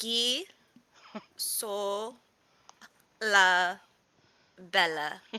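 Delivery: slow, each syllable said separately. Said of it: "He has to say it very slowly".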